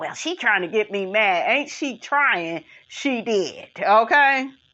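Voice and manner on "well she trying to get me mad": ordinary talk, nothing marked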